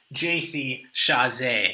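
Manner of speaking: put-on name said with French accent. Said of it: "I'm gonna say that with a French accent".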